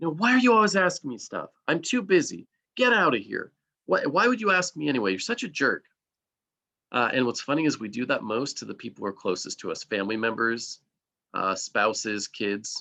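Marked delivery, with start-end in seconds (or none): 0.1-5.8 high, hostile, aggressive shouted yelling. Demonstrating an aggressive way to refuse someone asking for help, aggressive yelling.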